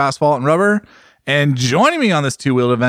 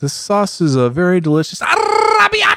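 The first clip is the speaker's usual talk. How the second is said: bad fake Italian accent, rolled r, slow sing-song; 7 semitones higher than usual. Mocking cooks who take on the food's accent: bad Italian accent. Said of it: "I don't think that's a good Italian accent, but I can roll the R".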